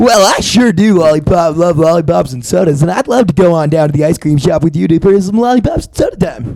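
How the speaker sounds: lively, animated cartoon-character delivery. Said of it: "cartoony, animated voice".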